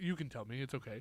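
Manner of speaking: low-pitched, deadpan delivery. Describing Leslie Nielsen's comedy in Airplane: Leslie Nielsen deadpan impression.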